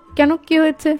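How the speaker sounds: ordinary talk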